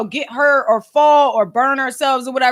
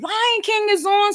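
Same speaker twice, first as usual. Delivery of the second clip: mock, high-pitched, screamed-out voice; 8 semitones higher, 3 dB quieter than usual. Retelling a childhood story where the mom calls from down the street: imitating her mom screaming. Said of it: "she's screaming".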